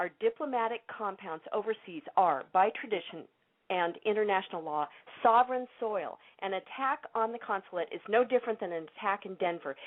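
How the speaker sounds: ordinary delivery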